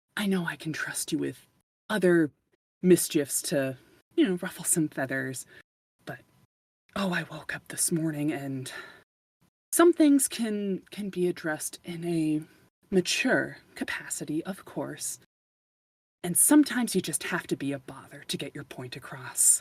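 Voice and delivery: theatrical, hushed, conspiratorial stage whisper. She huddles in close to the listener and speaks in a stage whisper. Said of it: "she kind of huddles in and stage whispers".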